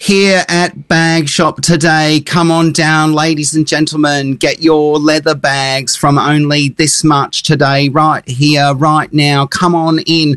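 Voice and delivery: put-on British accent, drawn out, amplified on a mic. Retelling a saleswoman calling shoppers into a bag shop: imitating a British accent. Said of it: "British accent".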